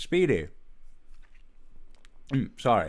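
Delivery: speaking with mouth full of food. Turning to Speedy with food in mouth: talking with mouth full. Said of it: "I have a mouth mouth partially uh, with some food in it".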